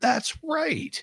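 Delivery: sudden recollection, pitched high. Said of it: "I was like".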